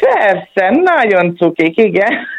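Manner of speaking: slow, ironic-sounding tone. Asked whether the children are nice, answer in an ironic tone. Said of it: "Ez kicsit ilyen ironikusan hangzik".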